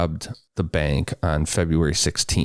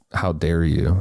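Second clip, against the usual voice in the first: mock offended, outraged indignation. Retelling how a bank robber reacted to the FBI's theory: imitating offended indignation. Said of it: "His tone, it was".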